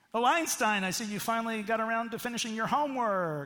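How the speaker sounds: loud, mocking, needling sarcasm. Showing an example of a crushing family comment: sarcastic remark. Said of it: "Sarcasm can be crushing in relationships".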